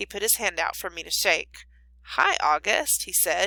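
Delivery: ordinary delivery, nothing marked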